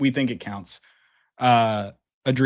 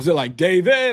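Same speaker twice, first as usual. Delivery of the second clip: loud, very high-pitched yell; 8 semitones higher, 5 dB louder than usual. An interviewer asks how a guest yelled at a game, yelling the name David. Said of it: "tell me how you yelled it".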